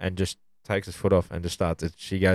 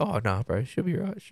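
put-on stoned voice, higher pitch, quieter; 6 semitones higher, 4 dB quieter than usual. Retelling a man's reply when asked if he was alright, imitating Kurt's stoned voice. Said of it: "Perpetually high voice".

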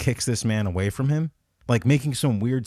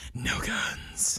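breathy whisper with little bass; 9 dB quieter than usual. Redoing the quoted line, imitating Batman with less bass. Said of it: "actually not that much bass".

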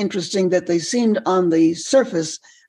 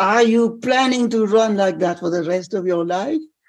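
put-on old man voice with French accent. Retelling an old man's words after knocking him over while running, imitating a French accent. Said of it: "He said in a French accent".

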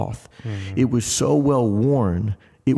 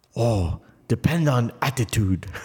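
put-on Korean-accented English. Retelling what a man answered when asked if he'd be okay: Korean accent. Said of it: "In his Korean accent".

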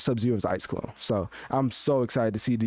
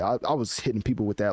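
normal talking voice

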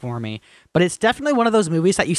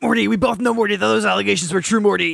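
rough, creaky cartoon character voice; 4 semitones higher than usual. Imagining Rick answering the allegations, in a Rick Sanchez voice. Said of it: "I want Rick to come in and be like".

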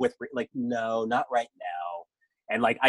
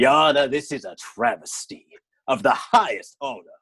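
put-on scheming voice, louder; 2 semitones higher, 5 dB louder than usual. Picturing Kevin Spacey in court still in character: imitating Kevin Spacey in character. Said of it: "that is his character".

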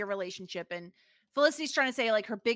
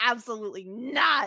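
mock-angry, put-on pissed-off tone. Retelling a woman refusing to be in someone's movie; mock-angry refusal. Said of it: "she's all pissed off".

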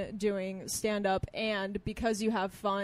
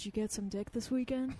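put-on whisper, quieter; 5 dB quieter than usual. Retelling a friend's remark at an open mic: imitating a whisper. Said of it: "turns and whispers to me".

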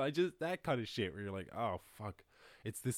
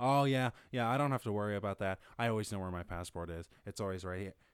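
patronizing, condescending, superior know-it-all tone; 4 dB louder than usual. Retelling what a condescending guy on a bus said: imitating a condescending tone. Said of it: "he was super fucking condescending".

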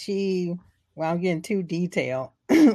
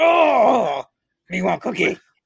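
oh stretched out and raised in pitch; 4 semitones higher, 7 dB louder than usual. Joking about how guys sound, a speaker does a Cookie Monster voice. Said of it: "That's how I imagine all guys sound".

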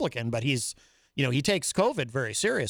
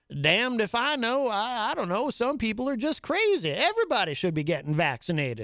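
terrible, clumsy put-on Southern accent, pitched higher; 8 semitones higher than usual. Retelling Kay Ivey answering reporters about vaccination, in a bad Southern accent. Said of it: "I do a terrible Southern accent".

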